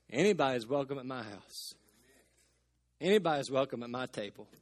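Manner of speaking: low, firm but humble, gentle and sweet voice. Speaker quoting Grandma, imitating her firm yet humble, sweet voice. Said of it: "in her firm yet humble, sweet voice".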